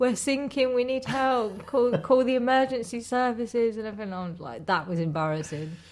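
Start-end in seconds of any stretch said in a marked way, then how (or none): 0.0-3.8 put-on high child's voice, shouting. Retelling a child's cries on a paddle boat: imitating Rory shouting for help. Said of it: "he's shouting out".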